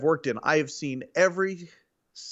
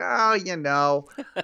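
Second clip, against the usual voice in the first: put-on Queens New York accent; 3 semitones higher than usual. Retelling what Rick said about a podcast: Queens accent imitating Rick. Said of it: "It's a great Queens impression".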